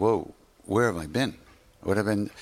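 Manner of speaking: ordinary talk, nothing marked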